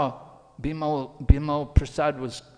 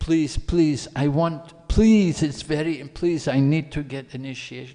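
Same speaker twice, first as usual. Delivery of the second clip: earnest, repeated begging, pleading tone; 4 dB louder than usual. Retelling how a disciple asked for initiation again: imitating someone begging. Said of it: "So then he begged".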